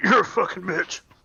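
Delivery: mock grunt under breath. Speaker acts out what he'd say when the guards come, grunted under his breath. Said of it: "kind of grunt under my breath".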